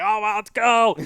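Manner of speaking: excited yell, high-pitched and loud.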